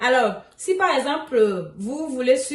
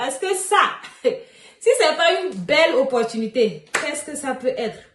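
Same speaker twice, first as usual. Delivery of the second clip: words spoken through a smile. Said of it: "Je souris en fait".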